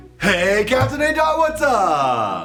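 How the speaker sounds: loud yelling. Greeting others standing right nearby, yelling a greeting. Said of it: "what's with the yelling?".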